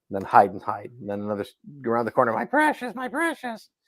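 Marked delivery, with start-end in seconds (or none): 2.3-3.6 very high-pitched, sneaky, skulking voice. Mocking a game's endless sound bites of skulking around corners: Gollum voice. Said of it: "him skulking around a corner going".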